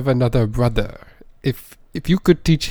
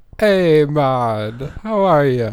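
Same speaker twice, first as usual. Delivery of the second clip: fake Jamaican accent, drawn way out, very slow; 3 semitones higher than usual. Playing a new brother in a skit: put-on Jamaican accent. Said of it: "that's not even the same guy".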